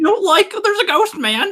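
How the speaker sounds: very high cartoon voice, swooping way up and around. Showing the other speaker a Shaggy impression: Shaggy voice. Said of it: "A Shaggy".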